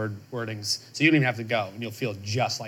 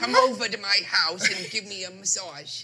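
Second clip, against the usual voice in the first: very high, slow, squeaky cartoon voice; 10 semitones higher than usual. Trying out an impersonation of the character: Timon voice. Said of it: "That's my impersonation".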